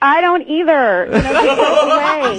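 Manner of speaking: loud yell. Retelling a date who yelled from behind a tree: imitating someone yelling. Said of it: "Yelling from behind the tree".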